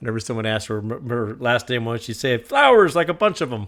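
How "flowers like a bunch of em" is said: loud, thick, heavy put-on German accent. Imitating a grandmother saying her last name: imitating a heavy German accent. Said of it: "she had a very heavy German accent".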